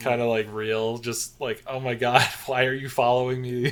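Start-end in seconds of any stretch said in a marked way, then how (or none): 1.7-3.7 super irritated, fed-up, annoyed tone. Acting out the character Shauna snapping at him: imitating annoyed Shauna. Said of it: "super annoyed explaining the same thing".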